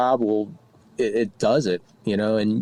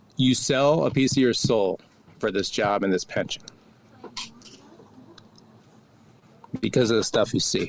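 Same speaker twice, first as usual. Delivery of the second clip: choked-up, swooping voice cracking with emotion. Recalling what former bosses told him about police work, choked up. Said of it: "I'm getting choked up on that".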